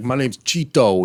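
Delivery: mock all-business, no-joke, completely serious delivery. Retelling how a guy introduced himself: imitating someone saying it seriously. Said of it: "all serious about it".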